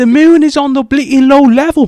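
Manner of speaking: very loud, very high yell. Trying an accent challenge impression: Conor McGregor impression. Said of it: "What does Conor McGregor say?".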